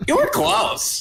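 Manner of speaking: very high, creaky character voice. Friends recall Pokemon Snap; speaker repeats the line in the Professor Oak voice. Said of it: "Remember he could do that voice?".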